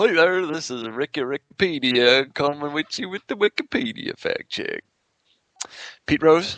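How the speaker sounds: high hillbilly voice. Introducing the Wikipedia fact check segment; Ricky Rickpedia hillbilly voice. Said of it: "What was that voice?".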